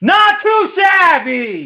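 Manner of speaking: very high, loud shouted yell. Describing a lavender-scented detergent: yelled. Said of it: "I'm just gonna kind of yell this one".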